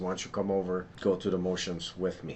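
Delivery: ordinary talk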